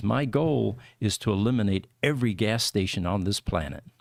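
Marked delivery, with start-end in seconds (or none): none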